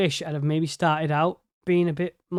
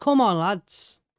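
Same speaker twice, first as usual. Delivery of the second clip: exasperated, urgent urging tone; 3 semitones higher than usual. Urging the lads on though they can't hear; shouting. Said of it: "I know I'm shouting".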